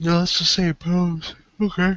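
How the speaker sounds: words stretched while talking through a yawn. Speaker clarifying which pose was meant, mid-conversation: yawning. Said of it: "Sorry for yawning".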